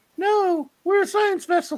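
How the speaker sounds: put-on ghostly small girl voice, very high. Retelling a voice that answers Macduff; disembodied little girl voice. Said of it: "Disembodied little girl voice".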